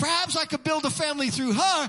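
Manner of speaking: plain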